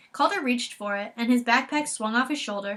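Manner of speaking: plain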